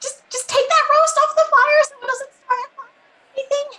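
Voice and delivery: very high-pitched voice. Playing a character calling into the kitchens that the casino is under attack, very high-pitched voice. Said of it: "your voice went so high that it peaked".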